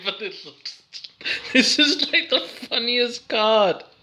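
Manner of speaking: high, giggling while trying to talk. Looking through cards and finding one funny, laughing while talking. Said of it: "I don't know why I'm laughing".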